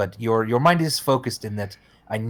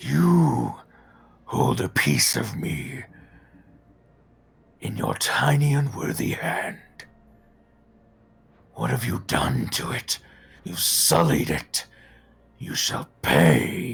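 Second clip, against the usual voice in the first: gruff, deep, rough-edged, creaky ancient beast voice. A game master voices a charging beast addressing the players: gruff, old, deep voice. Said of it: "you hear him say in a gruff, old, deep voice".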